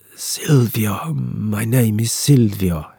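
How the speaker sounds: very slow, drawn-out murmur. An injured sailor gives his name out in the rain: barely audible murmur. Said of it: "he murmurs, his voice barely audible above the rain".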